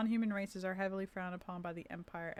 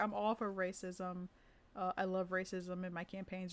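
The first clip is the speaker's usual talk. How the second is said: plain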